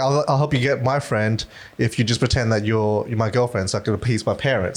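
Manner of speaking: ordinary talk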